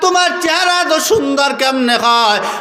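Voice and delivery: calling out.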